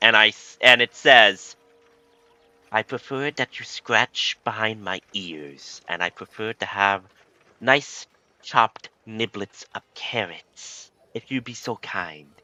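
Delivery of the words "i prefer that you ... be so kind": soft female talking rabbit voice. Telling a story, the speaker voices a bunny that grabs someone's beard: female bunny voice. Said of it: "As you hear a female voice from the bunny".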